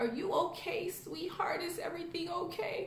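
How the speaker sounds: put-on elderly woman's voice, high-pitched. Retelling an old lady walking up to the speaker: old lady voice. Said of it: "That's my old lady voice".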